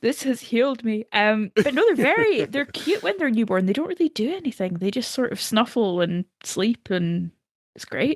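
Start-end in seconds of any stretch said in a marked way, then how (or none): 0.0-1.0 mock-tearful, put-on crying voice. Retelling holding a newborn for the first time, retelling her own crying. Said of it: "I started crying and going".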